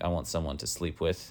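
ordinary talk, nothing marked

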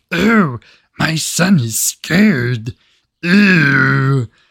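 goofy, very slow, cartoonish puppet voice. Complaining about a movie's mob boss woman, imitating her goofy voice. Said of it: "what character from Sesame Street is that?".

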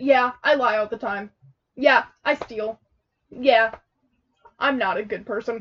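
normal talking voice

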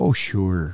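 mock nonchalant Wisconsin casual tone. Imitating a guest's reply about fixing machine guns: imitating Wisconsin nonchalance. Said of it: "such, like, Wisconsin nonchalantness".

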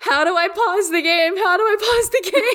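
play-acted shrill screaming, very high pitch. Retelling hiding from a helicopter in a game, screaming at him from the couch; retelling own screaming. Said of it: "I'm screaming at him from the couch".

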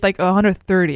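normal talking voice

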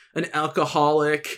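ordinary delivery

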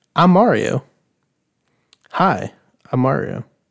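loud, slow, big, unhurried movie-star voice. Imagining the game announcer when selecting Mario: Chris Pratt as Mario. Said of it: "Could you imagine Chris, every time you select Mario, it's Chris Pratt?".

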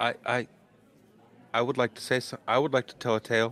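very soft-spoken, mild delivery. A slender robed figure steps forward to tell a tale, very soft voice. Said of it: "steps forward with a very soft voice".

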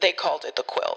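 put-on storybook narrator voice. Speaker introduces a band's album, switching into a narrator voice. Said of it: "This is where I put on my narrator voice and go".

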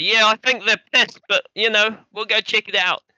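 shouting, high-pitched. Voicing a character answering while walking away: shouting over his shoulder. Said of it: "He kinda shouts over his shoulder".

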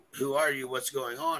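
ordinary talk

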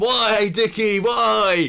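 high, loud shout. In a role-play game, Nigel's player cries out to Dickie, shouting. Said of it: "I shout".

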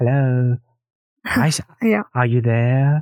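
imitated robotic, machine-like voice. Describing the game's cute but deadly turrets, imitating the robotic turrets. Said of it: "That's a pretty good impression".

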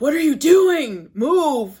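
angry yell, loud, slow and high-pitched.

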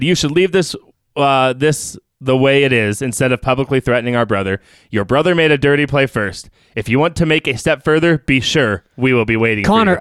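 normal talking voice

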